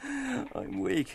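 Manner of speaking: very high, soft panting gasps between laughs. Lenehan, leaning on the river wall, gasps: panting with soft laughter. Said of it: "panting with soft laughter. he gasped".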